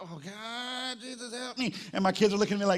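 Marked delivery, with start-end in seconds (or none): 0.0-1.7 slow, drawn-out pained groan. Retelling waking up stiff after a night in a twin bed: imitating own pained waking groan. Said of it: "And I wake up in the morning like".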